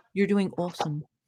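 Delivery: attempted British accent, low and soft. A host encourages the other host, in their best put-on British accent. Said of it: "I'm gonna put on my best British accent".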